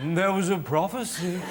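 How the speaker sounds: put-on solemn, portentous blind old man voice. Explaining how a prophecy should be said, in a blind old man voice. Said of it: "Like you're a blind old man".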